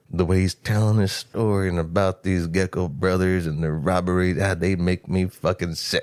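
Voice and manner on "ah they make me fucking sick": put-on almost-whispered voice, lower pitch. Retelling how the sheriff tells his story about the robbers: imitating Sheriff Earl McGraw's near whisper. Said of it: "he's almost at a whisper".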